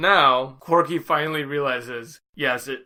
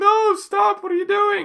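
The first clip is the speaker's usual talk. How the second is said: put-on, very high-pitched shrieking scream; 4 dB louder than usual. Retelling a scene where a boy's arm is twisted: imitating someone screaming. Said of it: "And he's screaming".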